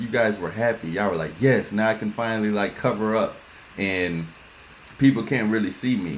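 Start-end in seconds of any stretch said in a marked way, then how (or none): none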